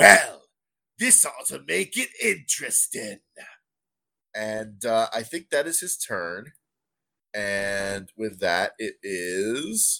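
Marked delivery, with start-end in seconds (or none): 0.0-3.2 high, scornful, contemptuous sneering voice. A game master voicing a character's reply during a tabletop game: sneering. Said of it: "he just sort of sneers and goes".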